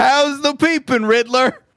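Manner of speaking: high, slow mock shout. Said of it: "I wanted to stand up and shout".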